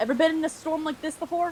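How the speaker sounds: high, strained shout pitched way up, in character. Shouting a question to companions over a loud storm: yelling in character. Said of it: "I'm gonna just yell then".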